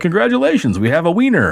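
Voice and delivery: put-on creepy game show host voice. Retelling what a creepy talking game show toy always said: Mister Game Show voice. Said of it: "howdy doody mixed with, like, a game show host guy".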